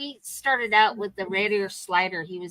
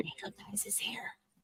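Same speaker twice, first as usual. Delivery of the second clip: hushed whisper, higher and quieter; 16 dB quieter than usual. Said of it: "What'd you just whisper?".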